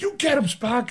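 very high-pitched cheering. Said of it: "I was like".

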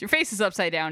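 ordinary delivery

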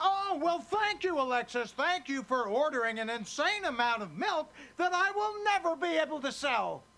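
dry, mocking sarcasm laid on heavy. Answering alexis, who expects thanks after her favor, sarcastic. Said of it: "She doesn't understand sarcasm so much".

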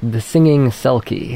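plain

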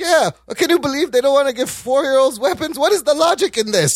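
sounding Israeli. Recounting how a man read something sincerely: Israeli accent. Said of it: "It's a great Israeli accent".

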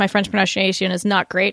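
ordinary talk

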